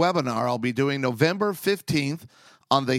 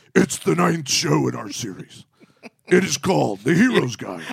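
gravelly, creaky superhero voice, ground out rough; 4 dB louder than usual. A podcast host announces the show's series in a Batman voice. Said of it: "Batman voice".

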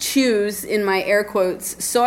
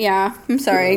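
usual speaking voice

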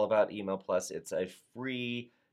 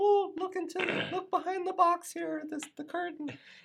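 very high, goofy, silly put-on funny voice. Playing out a reveal behind the curtain at the road shows: funny voice. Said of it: "I don't know why I had to do a funny voice there".

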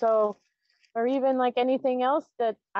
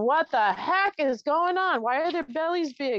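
put-on tearful, confused child voice, crying; 4 semitones higher than usual. Retelling asking as a child about starving children: retelling own childhood crying. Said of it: "and crying, going".

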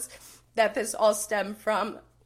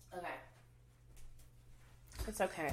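tearful, crying, much quieter; 4 semitones lower, 18 dB quieter than usual. Speaker reassuring herself after starting to cry, tearful. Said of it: "I kind of knew I was going to cry today".

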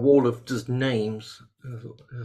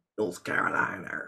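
breathy, hushed, terrible put-on American accent; 5 semitones lower, 6 dB quieter than usual. Reading out where people are from, the speaker tries a terrible american accent. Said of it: "that's a terrible accent".

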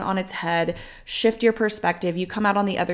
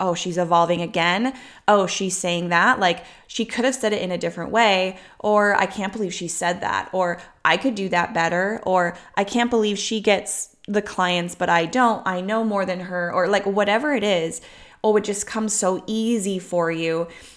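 ordinary talk, nothing marked

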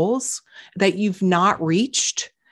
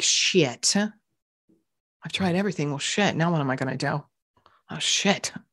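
dreading, let-down tone, lower and quieter; 4 semitones lower, 4 dB quieter than usual. Showing how a discouraging thought feels inside: dread, let myself down. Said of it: "It feels a little bit like dread".

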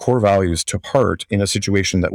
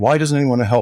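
mock indignant voice, much higher; 4 semitones higher than usual. Retelling how your past self reacted: acting out indignant foot-stomping. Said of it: "stomping my feet and saying".

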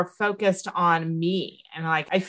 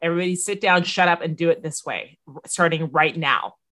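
plain

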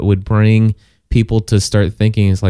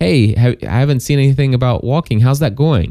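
kind, friendly, non-judgmental tone; 3 semitones higher than usual. Showing how to ask someone about their walks: kind, friendly tone. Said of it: "but in a very kind, friendly".

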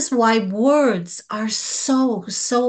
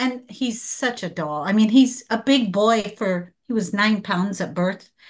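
ordinary talk, nothing marked

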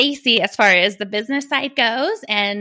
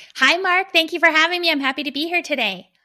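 bright, cheerful, upbeat, perky, pitched-up voice; 7 semitones higher than usual. A podcast guest greeting the host after being welcomed, perky and upbeat. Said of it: "you sound so perky, so upbeat".

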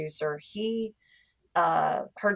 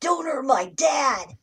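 high, pitched-up young boy cartoon voice; 8 semitones higher, 4 dB louder than usual. Asked to do the voice now, the speaker demonstrates Gohan's little boy voice. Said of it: "can you do that voice for us now?".

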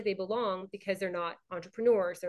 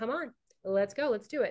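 ordinary delivery

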